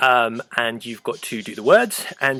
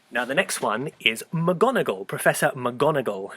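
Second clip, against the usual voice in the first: usual speaking voice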